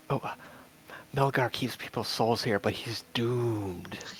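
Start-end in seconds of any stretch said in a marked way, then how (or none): 1.1-4.0 whispering, much quieter. Asked for an example, the speaker tells a secret to a candle, whispering. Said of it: "one of the secrets you whisper to it".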